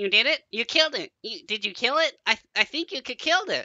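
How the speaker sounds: chattering, high-pitched little gnome voice. Narrating a story, the speaker voices a small gnome who chatters in a high-pitched voice. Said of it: "begins to chatter in a high-pitched voice".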